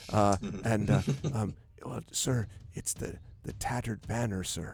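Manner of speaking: quiet, hesitant voice. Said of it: "she kinda gets real quiet".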